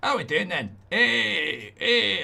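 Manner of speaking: put-on slow, high Scottish accent, "hey" stretched out. The speaker greets his audience as things get going, in a Scottish accent. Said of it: "I'll stop doing Scottish accents".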